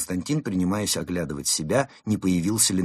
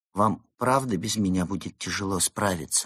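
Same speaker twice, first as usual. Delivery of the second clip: ordinary delivery, nothing marked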